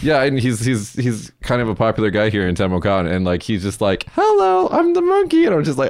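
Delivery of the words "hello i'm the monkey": put-on monkey voice, much higher, slower. Telling someone about a popular older man in Temokan, quoting him in a monkey voice. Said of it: "talking like the voice of the monkey".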